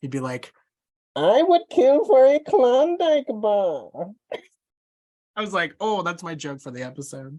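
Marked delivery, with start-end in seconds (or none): 1.2-3.9 slow, booming, shrill villain voice, swinging high. Doing the voice he practiced at work just for the others, Bane voice. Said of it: "I started practicing my Bane voice".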